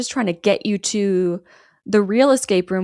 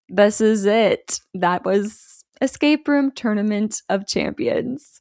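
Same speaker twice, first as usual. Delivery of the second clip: ordinary delivery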